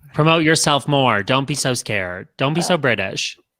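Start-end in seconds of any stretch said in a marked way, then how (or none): none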